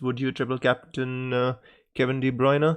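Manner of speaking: ordinary talk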